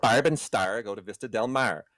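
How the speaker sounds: Midwestern American accent. Telling Larry how the line should be said, Midwestern accent. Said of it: "you have to say it with a Midwestern accent".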